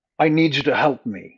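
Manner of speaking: very loud, booming, put-on man's voice. Voicing a possessed woman who speaks in a man's voice. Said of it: "she says in a man's voice".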